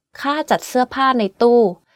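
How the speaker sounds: falling tone on nearly every syllable, jat kept low. Teaching tones with example sentences, the speaker says one in mostly falling tones. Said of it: "Every word on this sentence is in falling tone".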